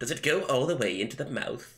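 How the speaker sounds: incredibly dorky anime voice. Describing how a character talks in the anime, imitating Rohan's dorky anime voice. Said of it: "he sounds like an incredible fucking dork".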